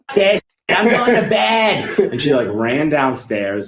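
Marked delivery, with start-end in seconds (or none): 0.1-1.9 mock nagging voice, higher and louder. Retelling what his mom said on hearing he took acid: imitating his nagging mom. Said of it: "he pretends to be his mom, and he's got that nagging".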